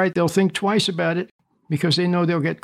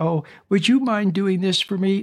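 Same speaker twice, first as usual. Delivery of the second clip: put-on sugary, honeyed, syrupy sweet voice; 2 semitones higher than usual. Acting out a coworker asking to dump work on you: syrupy sweet voice. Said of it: "syrupy sweet".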